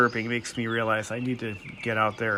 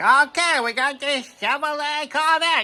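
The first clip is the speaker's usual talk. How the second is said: put-on car salesman voice, terrible New England accent, higher. Retelling local TV used car ads: imitating a used car dealer with a terrible New England accent. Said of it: "hawking shitty cars with a terrible New England accent".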